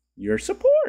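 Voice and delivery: very high voice, cracking and breaking up. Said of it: "My voice got".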